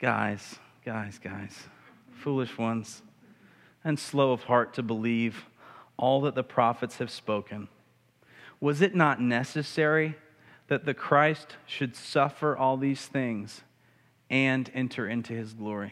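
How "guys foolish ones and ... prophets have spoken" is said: mild, kindly, low gentle tone. Speaker imagines how he addressed them after their story, retelling words gently, not harsh. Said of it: "didn't say that with a harsh tone. He probably just kind of said".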